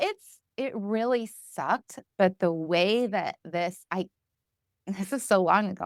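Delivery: slow, emotional delivery. Remembering being taken to sit by the water, getting emotional. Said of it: "I'm surprised I'm getting emotional about it".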